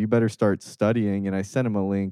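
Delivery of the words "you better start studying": usual speaking voice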